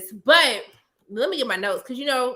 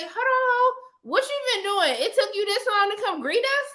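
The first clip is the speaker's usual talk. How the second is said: mock snide, needling tone, pitched up; 9 semitones higher than usual. Retelling a show scene, imitating someone throwing shade. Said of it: "Damon throws some shade like".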